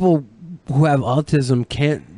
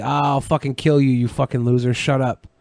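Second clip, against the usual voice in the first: ordinary delivery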